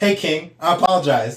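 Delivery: mock overly polite voice. Replaying how a driver who beeped might have spoken: imitating an overly polite driver. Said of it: "he gets progressively more polite".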